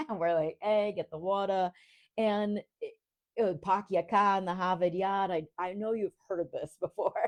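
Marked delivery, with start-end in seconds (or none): 0.6-5.3 Rhode Island accent, dropped R's, much slower. Speaker turns on their own Rhode Island accent for listeners: Rhode Island accent, no R's. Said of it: "Rhode Islanders have no R's".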